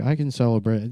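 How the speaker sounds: ordinary talk, nothing marked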